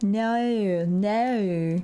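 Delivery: "no" said in an Australian accent. Speaker retries the no that folks in chat disapprove of: Australian-accented no. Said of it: "Australian no".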